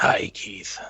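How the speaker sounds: scratchy put-on voice. Greeting the host in character as the guest: scratchy Geralt of Rivia voice. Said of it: "very scratchy".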